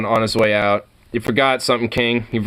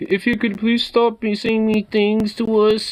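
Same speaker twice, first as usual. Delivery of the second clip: very high, timid, meek put-on little voice; 11 semitones higher than usual. Retelling what someone in a video said: imitating a meek voice. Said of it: "in this meek voice".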